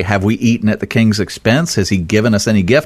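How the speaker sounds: ordinary talk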